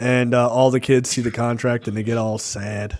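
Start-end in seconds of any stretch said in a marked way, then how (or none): none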